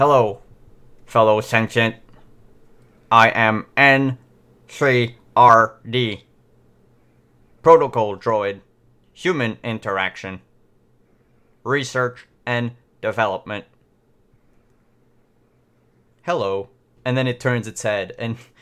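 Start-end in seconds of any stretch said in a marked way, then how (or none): 0.0-16.7 loud, slow, glitchy, static-laden robot voice. A repaired protocol droid boots up and speaks to you, staticky droid voice. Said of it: "there's like a static sound in it".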